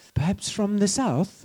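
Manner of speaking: high, slow, mock Irish accent.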